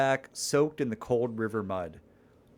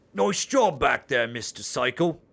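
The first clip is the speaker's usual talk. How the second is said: dumb, dim-witted character voice; 4 dB louder than usual. Reading a comedy scene aloud, speaking in the dumb character's voice. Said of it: "you seem to be doing the voice for the dumb one".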